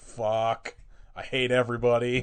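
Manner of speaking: fed-up, over-it, very slowly dragged-out delivery. Retelling how Frank reacts to everything: imitating Frank fed up. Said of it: "Frank is so over all of this".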